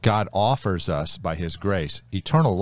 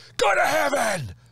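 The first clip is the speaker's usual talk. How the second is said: put-on shrill, very high-pitched distant scream. Retelling shouting at two guys squaring off to fight: imitating own past scream. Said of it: "I just screamed at them".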